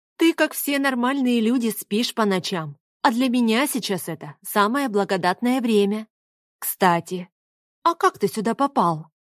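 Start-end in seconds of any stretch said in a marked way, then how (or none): none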